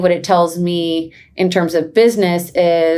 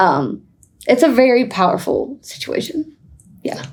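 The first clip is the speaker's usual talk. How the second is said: emotional, moved voice, pitched a little high; 6 semitones higher than usual. Talking about bringing others into new experiences, getting emotional. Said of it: "I'm going to get emotional a second".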